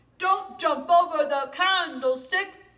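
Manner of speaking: loud, high lion voice. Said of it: "both my lion voice and my mouse voice".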